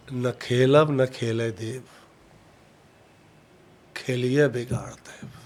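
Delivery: low, slow, menacing villain-style delivery.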